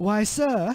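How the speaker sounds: put-on British accent. Voicing a character's reply while making up a story, in a british accent. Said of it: "he says with his best British accent".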